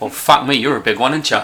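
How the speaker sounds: teasing, mocking, ribbing tone. Voicing Copper Dan mocking a big party member: voicing Copper Dan mocking. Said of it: "they all kinda laugh and they're cackling".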